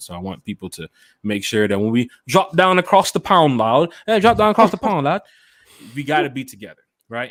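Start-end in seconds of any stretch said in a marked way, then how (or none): 1.9-7.3 bad, loud, high put-on British accent. Addressing london fans with a put-on british accent. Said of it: "Was that your Peppa Pig accent?".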